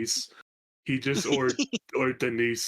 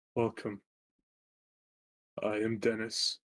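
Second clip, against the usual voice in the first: put-on old man character voice, quieter; 5 dB quieter than usual. Voicing an old man who greets the party. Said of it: "and just states".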